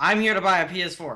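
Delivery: put-on clear, declaring public announcer voice. The speaker retells getting past a long line of people, saying it very loudly. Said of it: "I actually said very loudly".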